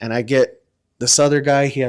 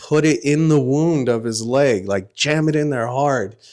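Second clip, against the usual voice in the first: ordinary talk, nothing marked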